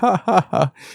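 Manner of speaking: high, forced, anxious nervous laugh. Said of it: "a little bit of an anxious, nervous laugh".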